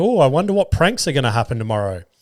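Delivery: plain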